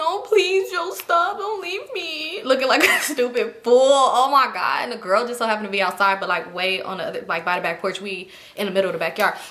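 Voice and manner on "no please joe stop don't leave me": very slow, high, tearful crying plea. Retelling a breakup, the speaker begs him not to leave, imitating her past crying plea. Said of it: "So I'm crying".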